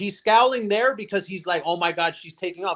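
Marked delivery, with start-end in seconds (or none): none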